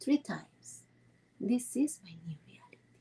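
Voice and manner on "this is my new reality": a little lower, somewhat softer, more hushed. Guiding listeners to repeat an affirmation to themselves three times, a little bit lower. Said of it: "repeat a little bit lower".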